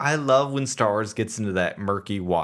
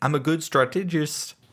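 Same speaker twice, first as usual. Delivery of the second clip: attempted New Zealand accent, pitched up; 5 semitones higher than usual. Retelling a line from the show, trying to sound like a New Zealander. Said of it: "trying to sound like a New Zealander".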